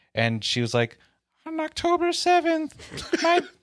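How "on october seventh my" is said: put-on little girl voice, higher. Retelling a commercial's letter to Santa: little girl voice. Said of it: "it was the voice of a little girl".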